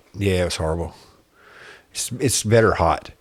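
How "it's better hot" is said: sarcastic, tongue-in-cheek tone meaning the opposite. Recalling drinking a hot, horrible beer with a friend: sarcastic. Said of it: "I say that sarcastically".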